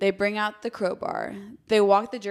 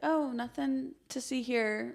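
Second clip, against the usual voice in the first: soft, slow, casual, unbothered, very relaxed nonchalance; 4 semitones higher, 6 dB quieter than usual. Retelling how someone stayed quiet about a situation: imitating someone relaxed. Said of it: "very relaxed about the situation".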